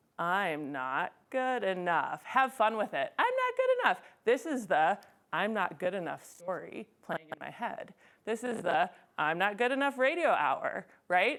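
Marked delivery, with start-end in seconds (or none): 0.2-2.2 silly voice, dragged out very slowly. Guiding listeners through a game with a negative thought: said really slowly. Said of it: "Say it really slowly".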